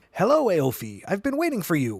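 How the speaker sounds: flutelike, tinkling, sing-song, bell-like leprechaun voice. Reading a story aloud, a leprechaun greets a girl in a bell-and-flute leprechaun voice. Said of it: "in a voice that sounded like a mix of a bell and a flute".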